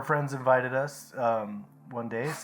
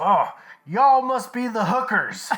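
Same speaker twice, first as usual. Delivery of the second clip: put-on heavy Texas accent, shrill, very high, very loud; 10 semitones higher, 11 dB louder than usual. Retelling how a woman greeted them at the door, in a thick texas accent. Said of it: "she's got this thick, Texas accent".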